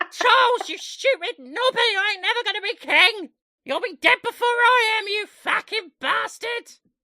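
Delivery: very high, very loud, shrill, bellowing tavern wench voice. Voicing the queen cursing at Charles: old-timey tavern wench voice. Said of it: "sounded like an old-timey tavern wench".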